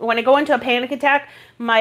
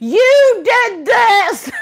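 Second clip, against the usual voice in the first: angry, shrill, high-pitched yell; 11 semitones higher, 6 dB louder than usual. Recounting yelling out a small crack of the window, retelling a yell. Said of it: "I'm yelling out this little crack of the window".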